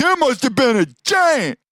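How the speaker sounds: sudden, very high, swooping yelling outburst. Imagining Socrates telling others about a fossil: imitating someone yelling.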